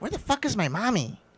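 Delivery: put-on very high-pitched, very young little kid's voice. Speaker retelling what a guy said, maybe as a joke: very young, high-pitched voice. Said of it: "very young, very high pitched voice".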